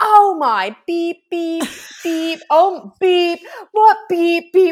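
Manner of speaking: acted, very high, very slow, loud, bleeped excited outburst. Retelling a bride running into the room: imitating an excited bride swearing. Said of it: "She was excited".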